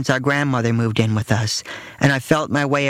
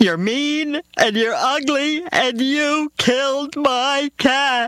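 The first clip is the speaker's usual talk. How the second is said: shrill, very high, tearful, sobbing scream; 12 semitones higher than usual. A young daughter keeps accusing the narrator's mother, screaming while sobbing. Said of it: "she screamed, sobbing into her mother's skirt".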